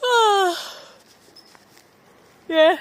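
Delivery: loud, high words stretched by a yawn. Chatting on camera, the speaker replies while yawning. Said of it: "I'm yawning".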